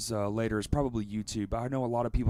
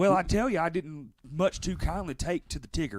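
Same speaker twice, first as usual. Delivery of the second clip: put-on Southern American accent with raised pitch; 6 semitones higher than usual. Starting a joking Southern Mamas movie review bit: Southern accent. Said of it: "We should do it in with southern accents next time".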